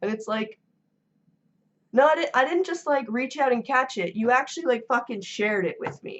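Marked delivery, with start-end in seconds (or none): 1.9-6.2 angry, heated, worked-up irate rant. Speaker venting to listeners about catching a cold, getting angry. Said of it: "Sorry, I'm getting angry".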